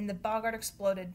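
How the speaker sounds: ordinary delivery, nothing marked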